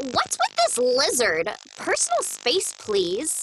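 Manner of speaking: bratty, stuck-up, snotty, natural-sounding character voice. Performing a character line after being asked to do that voice: Io voice. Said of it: "I'll do Io".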